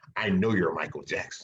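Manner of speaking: imitated whisper. Retelling how passersby whispered to him in disguise: imitating a passerby's whisper. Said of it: "people would walk by him and whisper to him".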